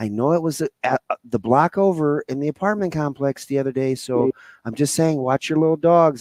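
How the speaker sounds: put-on hushed, soft-spoken voice. Retelling what a quiet neighbor said across the yard: imitating her lowered voice. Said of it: "she kinda dropped her voice".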